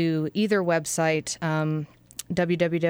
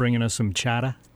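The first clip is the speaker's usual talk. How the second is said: low put-on Boston accent, r dropped in "chowder"; 5 semitones lower than usual. Responding to news that someone's mom is flying in from Boston, attempted Boston accent. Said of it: "Nice attempt at a Boston accent".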